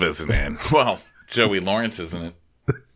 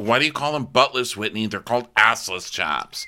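put-on angry voice, higher; 3 semitones higher than usual. Retelling a reply from Naomi: imitating someone mad. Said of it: "She's so mad".

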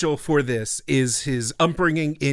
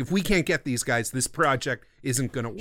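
usual speaking voice

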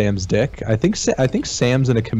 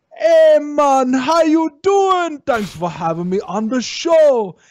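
bad, fake Jamaican accent, very high-pitched; 3 dB louder than usual. Retelling how a guest answered in an interview: imitating a bad Jamaican accent. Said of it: "goes straight bad Jamaican accent".

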